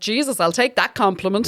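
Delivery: ordinary delivery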